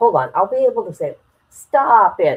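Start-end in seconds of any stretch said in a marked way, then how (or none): 1.5-2.4 attempted Boston accent, louder. Trying again to say a short phrase: attempted Boston accent. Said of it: "talk in an accent of people in Boston".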